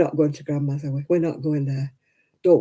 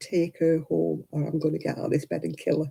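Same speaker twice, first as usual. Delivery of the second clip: muttered under breath, much quieter; 5 dB quieter than usual. Retelling what she muttered to her husband after giving birth, muttering under breath. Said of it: "muttering under my breath".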